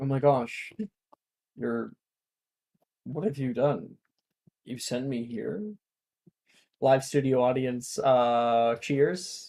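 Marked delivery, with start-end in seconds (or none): 1.6-5.6 dry, flat, expressionless deadpan delivery. Doing an impression of Ito as a summoned house elf: deadpan impression of Ito. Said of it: "my impression of Ito".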